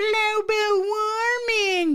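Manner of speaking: high, slow, crying, whiny voice. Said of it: "when you say it in that stupid voice".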